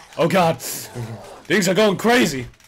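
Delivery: high, loud yell through laughter. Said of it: "I heard her yell".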